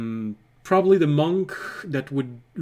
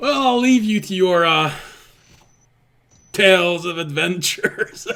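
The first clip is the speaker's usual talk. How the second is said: laughing through the line, higher and louder; 5 semitones higher, 5 dB louder than usual. Voicing a character's parting line to a player, laughing while talking. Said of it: "couldn't say this without keeping a straight face".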